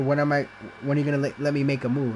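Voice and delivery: plain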